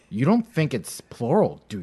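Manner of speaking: put-on patronizing, condescending tone with swooping pitch. Quoting another speaker's question back, imitating a condescending tone. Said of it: "She said, I, and I quote".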